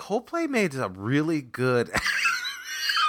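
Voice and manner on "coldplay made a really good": slow, straight-faced, earnest and sincere. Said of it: "People will be like".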